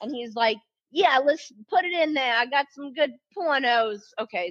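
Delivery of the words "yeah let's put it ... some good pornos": clumsy, bad put-on New York accent, pitched up. Retelling a story about Bobby bringing a box over: Bobby in a bad New York accent. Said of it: "This is really bad accent".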